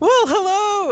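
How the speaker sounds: voice shooting way up, shrill, loud, weirdly high. Teasing another speaker about their podcast opening: imitating a pitch going weirdly up. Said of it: "weirdly up, like, in your pitch".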